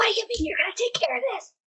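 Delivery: hissed shout, pitched way up high. Voicing a character in a tabletop game as an ally runs off: whisper-yelling. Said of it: "whisper, yell at him".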